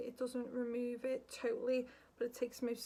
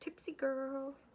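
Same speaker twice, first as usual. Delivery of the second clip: put-on, laid-on American-style pronunciation. Naming the product while using a brush: American accent. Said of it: "I don't know why I've got to do it with an American accent".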